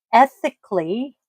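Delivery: stress on ethically.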